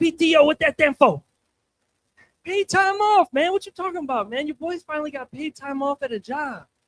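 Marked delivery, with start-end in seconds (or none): 0.0-1.2 excited, worked-up country twang voice. Retelling his dad's reaction to hearing he got PTO, in an excited redneck Mike Tyson voice. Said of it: "sounds like a redneck Mike Tyson when he gets all excited".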